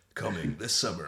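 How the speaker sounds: deep, hushed movie-trailer narrator voice. Joking around with friends, in a movie trailer voice. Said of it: "like a movie trailer voice".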